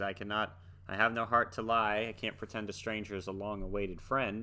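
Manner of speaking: ordinary talk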